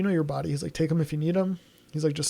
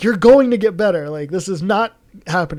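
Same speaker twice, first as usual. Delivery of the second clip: raised yelling voice; 3 semitones higher, 9 dB louder than usual. Retelling waking up sick and yelling at himself: retelling yelling at himself. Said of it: "yelling at myself".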